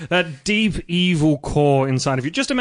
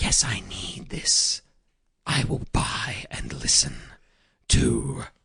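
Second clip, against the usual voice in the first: sinister, breathy, slow, hushed evil near-whisper; 9 semitones lower, 6 dB quieter than usual. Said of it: "Why did the voice sound so evil?".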